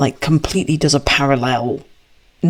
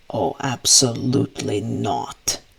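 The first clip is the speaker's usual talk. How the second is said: low, grumbled mutter under the breath; 4 semitones lower, 4 dB quieter than usual. Voicing Strahd as he sees through a giant eagle: muttering under his breath. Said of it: "under his breath, mutter".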